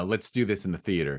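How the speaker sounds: ordinary delivery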